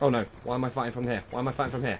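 flustered, fast, panicked babble, words tumbling out. Fighting through a tight moment in a match, panicking. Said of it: "panicking like a".

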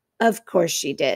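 muttered quietly. A narrator reads Mr. Beaver speaking after his wife, muttered to himself. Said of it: "Beaver muttered to himself".

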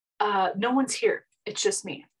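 mock-upset, concerned. Retelling what mom said when asked about people behind her, imitating upset concern. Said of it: "She was really upset".

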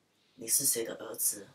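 slow, soft, thick Taiwanese accent.

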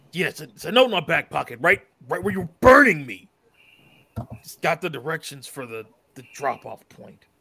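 beastly, wolf-like voice. A captive character answers the one burning him, sounding like his werewolf self. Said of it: "Almost like he sounded when he was a werewolf".

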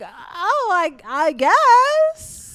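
high, very slow, bewildered, hesitant, drawn out.

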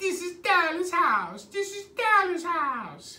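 squeaky, very high, little cartoon maid voice. Retelling a phone call where a woman answered, Family Guy Mexican maid impression. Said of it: "she sounded like that little Mexican maid".

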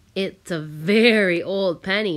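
with a chuckle. A mother joins the family talk while cooking supper, chuckling.

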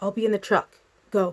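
hushed whispering. He urges her toward the door while someone pounds on it, whispered. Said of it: "he whispered".

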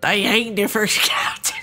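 put-on old-time seventeenth-century pirate voice. Reading a historical note aloud, the speaker tries a 1696 pirate voice. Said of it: "I'm going to do my 1696 pirate voice for this note".

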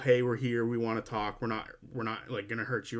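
ordinary delivery

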